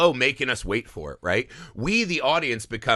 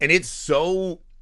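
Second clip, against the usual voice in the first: usual speaking voice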